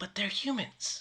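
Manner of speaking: barely audible, very quiet whisper. During the group's game, a player adds an aside, whispering very quietly. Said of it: "whispers very quietly".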